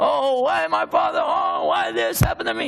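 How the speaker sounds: high-pitched, grief-stricken, despairing wail. Showing the kind of crying over a father's death he avoided: mock despairing crying.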